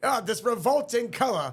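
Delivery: put-on funny high New York accent. Describing four pumpkins who dislike anything green, the speaker quotes them: funny New York accent. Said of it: "funny little New York accent thing".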